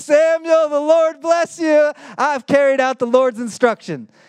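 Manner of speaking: put-on eager, proud voice. Retelling a scripture passage, the speaker acts out a man's eager report: acting out excited speech. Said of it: "Can you hear the excitement in Saul's voice?".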